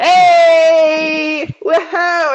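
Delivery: overly cheerful, loud, high whoop, long drawn-out "hey". Retelling a scene from a story: imitating an overly cheerful guy. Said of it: "this guy's like".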